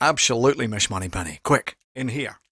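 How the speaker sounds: growling Scottish voice. Guessing a voice for a viewer's comment: Sean Connery voice. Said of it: "kind of Scottish boy voice, but he kind of, he growls".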